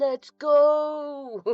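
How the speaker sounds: very slow, loud, hyped, drawn-out ring-announcer voice. Greeting people one by one, the speaker switches into a wrestler voice. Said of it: "In wrestler voice".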